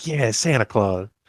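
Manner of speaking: soft, beaming, cheerful delivery. Retelling a scene where the son answers his dad: imitating beaming Christmas cheer. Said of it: "Charlie's all beaming with Christmas spirit".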